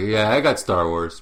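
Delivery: casual, smug, self-satisfied offhand boasting tone. Retelling how someone told a friend about the job: imitating someone being smug. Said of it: "So smug".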